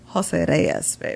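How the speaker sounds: breathy, put-on Spanish accent. Insisting on saying a name his own way, in a fake Spanish-style accent. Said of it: "I gotta say it like that, babe. / We're doing a fake accent now? Teddy, you're Dominican?".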